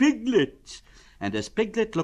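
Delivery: plain reading voice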